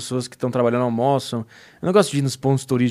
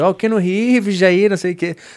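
flattering, pitched-up Carioca beach vendor patter; 7 semitones higher, 5 dB louder than usual. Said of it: "esse cara chegou, falou que".

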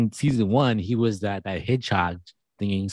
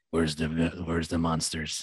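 throat-straining voice, lower and quieter; 5 semitones lower, 7 dB quieter than usual. After watching the show, the speaker starts talking like Geralt: Geralt voice. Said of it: "I'm like starting to talk like Geralt".

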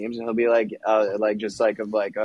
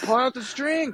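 very high, shrill, screeching yell; 14 semitones higher than usual. Retelling a video of a hooked surfer, imitating someone yelling. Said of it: "the guys are, like, yelling".

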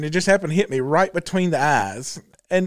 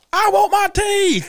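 put-on very high, very slow, drawn-out scream; 14 semitones higher, 3 dB louder than usual. Retelling what a woman was heard screaming, imitating her screaming. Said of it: "you can hear her screaming like".

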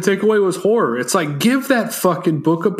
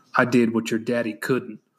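very low, close, private-sounding hushed half-whisper; 8 semitones lower, 6 dB quieter than usual. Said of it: "he whispers in his ear".

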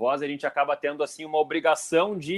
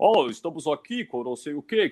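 put-on old radio announcer voice, slower. Recalling how radio announcers of old used to talk, the speaker does an old radio announcer voice. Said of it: "falava com aquela voz assim, mais, mais, mais impostada".

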